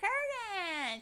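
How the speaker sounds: shrill, very high, hysterical shriek. Acting out the wife who keeps yelling her husband's name, imitating Yeardley Smith yelling hysterically. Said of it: "she keeps getting hysterical and yelling his name".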